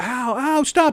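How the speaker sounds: mock yelling. Retelling a staged call with fake slap noises, retelling a woman's yell. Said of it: "She starts yelling".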